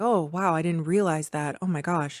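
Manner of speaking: put-on shaken, trembling voice. Retelling how Esme reacts to a warning: imitating a shaken Esme. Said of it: "Esme is really shaken".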